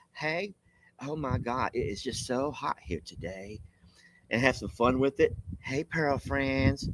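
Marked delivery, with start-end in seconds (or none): 0.2-3.6 hushed, slow, drawn-out South Carolina accent. Suggesting a new greeting, the speaker demonstrates a South Carolina accent. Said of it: "change your voice like South Carolina".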